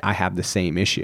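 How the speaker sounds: normal talking voice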